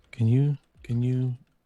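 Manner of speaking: close, soft whisper. Leaning in close to the captain to ask something: whispering in someone's ear. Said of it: "whisper in your ear".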